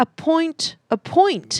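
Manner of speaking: attempted British accent, very high, slow and drawn out. Trying to order a British drink: attempted British accent. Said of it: "Let's see if I can do it".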